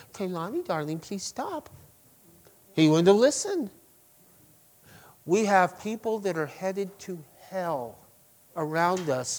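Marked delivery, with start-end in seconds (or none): 0.1-1.7 sugary, saccharine, gentle, syrupy sweet tone. Imagined pleading with someone named Kalani to stop, syrupy sweet. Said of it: "it's syrupy sweet".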